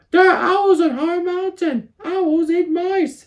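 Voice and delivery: anxious, worried little mouse voice, very high. Reading a story aloud, voicing Cornbread the mouse talking to Poppy, worried Cornbread voice. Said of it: "[name] worried he had not have enough food to get through winter. But he also loved to plan and prepare. / [name] was worried, and he didn't love to venture like [name] did. But [name] was his best fr".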